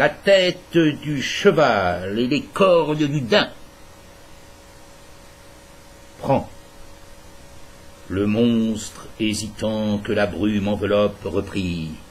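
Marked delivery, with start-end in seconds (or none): 0.0-6.5 scornful, dismissive, disdainful tone. The being answers a hesitant monster asking what it needs; with disdain. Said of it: "avec dédain".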